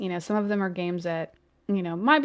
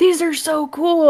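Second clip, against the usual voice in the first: put-on high, loud, squealing, excited kid voice. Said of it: "He's like".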